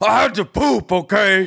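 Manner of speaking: mock very high, drawn-out angry grown man voice. Retelling what a man said, the speaker imitates an angry adult man. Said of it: "an angry adult male to be like".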